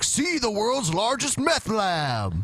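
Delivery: mock announcer voice, slow and high.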